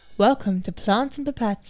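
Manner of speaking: gentle, soothing, calming host voice. Podcast host opening the show plants and pipettes, in a soothing voice. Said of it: "This is my soothing voice".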